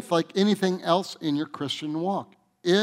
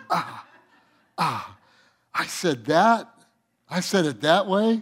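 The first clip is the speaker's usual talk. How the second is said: put-on embarrassed, cringing disbelief, slow. Retelling hearing own old sermon tapes: retelling a cringing reaction. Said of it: "I'm cringing".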